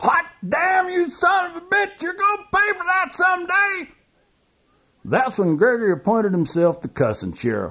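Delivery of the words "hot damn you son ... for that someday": high-pitched preaching from the pulpit. Narrator reads little brother Gary cussing after a beating, cussing like a Baptist preacher. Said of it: "he sounded like a Baptist preacher".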